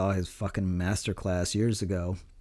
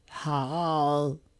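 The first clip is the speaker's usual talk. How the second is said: choked-up, high-pitched, long drawn-out "hi"; 7 semitones higher than usual. Recalling the one thing remembered about Stitch: the choked-up voice. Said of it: "he had a very choked up voice like this".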